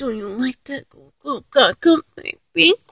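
put-on hushed, soft, pouting little baby voice.

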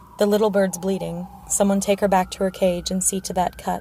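plain

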